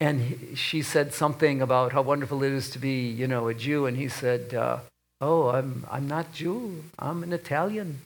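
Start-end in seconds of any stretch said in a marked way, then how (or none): 5.2-8.0 slow, slight, put-on Yiddish accent. Retelling a father's words to a lady on a plane: imitating a put-on Yiddish accent. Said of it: "he put his little Yiddish accent on".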